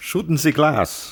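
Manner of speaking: put-on German accent. Retrying the Hans from Die Hard line in fake German: Hans from Die Hard voice. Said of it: "How did he say it in German?".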